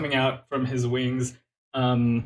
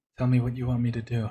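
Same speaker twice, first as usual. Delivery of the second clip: put-on very low hushed whisper. Retelling what she said while you were both near: retelling a very low whisper. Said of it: "She whispers very low".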